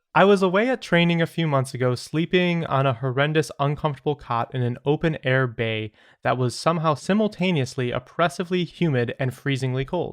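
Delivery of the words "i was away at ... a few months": plain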